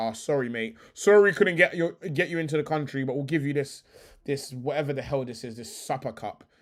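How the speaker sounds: ordinary talk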